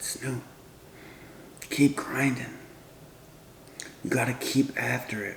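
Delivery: soft, hushed, breathy near-whisper. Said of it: "in his soft voice".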